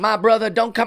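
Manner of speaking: bad fake cartoon dialect. Criticizing a man's interviews, speaker quotes him doing a bad cartoon-dialect impression.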